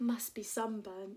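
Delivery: ordinary delivery, nothing marked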